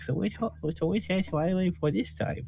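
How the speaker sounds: tiny, very high, cutesy bunny voice. Playing out how a player asks a question in the game, in a cute small bunny voice. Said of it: "in a cute little like small bunny voice".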